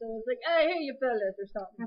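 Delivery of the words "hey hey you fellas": put-on Southern US accent. Retelling a scene where Eric speaks Southern: imitating Eric's Southern accent. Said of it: "he had to speak South Southern".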